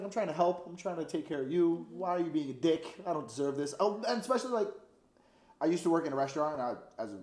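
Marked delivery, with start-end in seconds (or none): none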